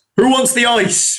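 high-pitched, called-out shout. Recounting a character stepping off a ramp before a reception committee, retelling a shout. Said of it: "Jamie's character steps off and shouts".

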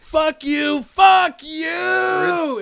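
high, loud, furious yell. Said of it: "he's just yelling at all these little girls".

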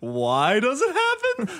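very high, slow, drawn-out, swooping sing-song. Mimicking a news reporter's line from a clip, like Doctor Seuss. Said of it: "she sounds like Doctor Seuss".

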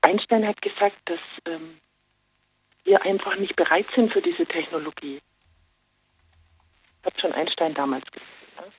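speaking quietly. Talking to a listener while others nearby are asleep: speaking quietly, others asleep. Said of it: "ich kann nicht so laut reden. Die schlafen ja alle".

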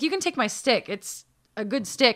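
ordinary delivery

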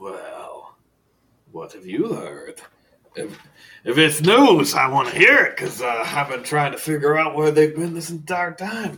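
very loud, booming, high eccentric librarian voice. Voicing the librarian asked about vampire assassins: voicing Faust the librarian. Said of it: "And he goes".

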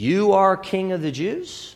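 flat, statement-like tune with faint rising lift on one word. Show how you think Pilate said this to Jesus, like a statement question. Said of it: "more like a statement question".

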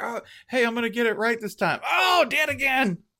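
voice pushed way up high. Imitating Scott Frost dying and trying again each Saturday: imitating Scott Frost reliving Saturday. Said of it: "Every Saturday, like".

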